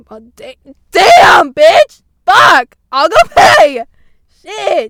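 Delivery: shrill, full-volume, very loud screaming outburst. Host retells reacting to being yelled at in a store, screaming. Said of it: "Sorry, I'm screaming a lot this episode".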